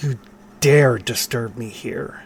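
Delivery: slow, drawn-out, hissed vampire voice. Game master voicing a disturbed figure confronting the players, hissing. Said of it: "He kind of hisses".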